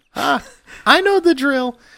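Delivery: shrill, very high, loud orc woman voice. Voicing an orc woman behind a butcher's bar greeting a player: orc woman voice. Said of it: "there is an orc woman standing behind the bar".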